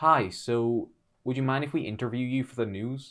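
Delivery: clumsy, poor, put-on American accent. Quoting a lady who set up next to them, in a bad American accent. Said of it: "That was the worst American accent I've ever done".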